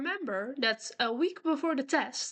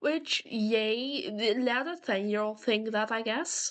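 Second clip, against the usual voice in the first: normal talking voice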